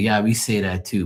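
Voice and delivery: plain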